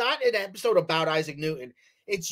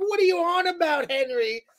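very high put-on British female voice; 12 semitones higher than usual. Speaker acts out an imagined old man's wife walking in on him, imitating an imagined wife. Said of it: "then his wife comes in and she's like".

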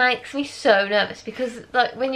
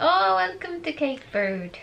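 put-on, vaguely Irish accent; 5 semitones higher than usual. Imagining the locals greeting them on arrival, in a put-on Irish-sounding accent. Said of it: "I don't know what that accent was, they're not Irish".

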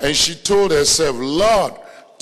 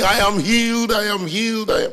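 mock screaming, higher pitch; 4 semitones higher than usual. Retelling how a woman jumped up during a service: imitating someone screaming. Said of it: "she started screaming".

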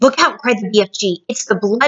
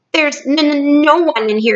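nervous stammering in a much higher pitch; 5 semitones higher than usual. The nervous BFG answers the giant blood bottler, stammering nervously. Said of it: "he stammered".

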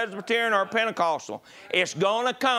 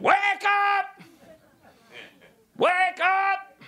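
acted, very high, very slow preacher-style scream; 11 semitones higher than usual. Retelling a video where T D Jakes tells people to wake up: imitating T D Jakes screaming. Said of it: "he's screaming".

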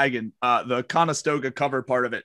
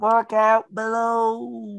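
tiny, small, high little voice, drawn out; 9 semitones higher than usual. Narrating a dice game as a figure calls out a warning, little voice. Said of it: "you hear a little voice just go".

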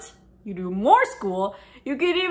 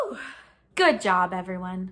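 ordinary delivery

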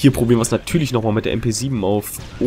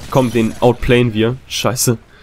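usual speaking voice

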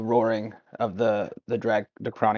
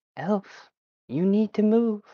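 very high voice, sounding distant, calling from far off; 11 semitones higher, 3 dB louder than usual. Narrating the scene, a far-off voice calls to the elf; distant voice. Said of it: "the voice further away".

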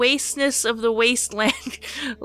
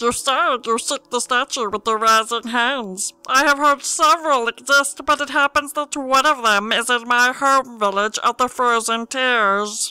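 loud, fully committed put-on creature voice; 5 dB louder than usual. Playing a game, speaker voices a character's dialogue; murloc voice. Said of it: "This is my murloc voice".

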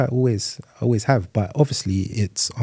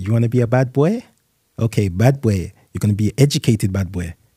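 put-on kind of Caribbean accent, lightly done. Quoting what a grandfather used to say to them, a speaker uses a Caribbean voice. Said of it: "in his kind of Caribbean voice".

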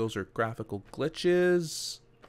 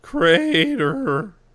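very loud voice breaking into squeak on crater; 7 semitones higher, 10 dB louder than usual. Walking along the edge toward the house past the crater, voice cracking. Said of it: "my voice cracked when I said crater".

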